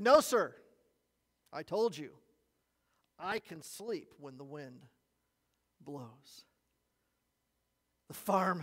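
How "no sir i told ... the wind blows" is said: usual speaking voice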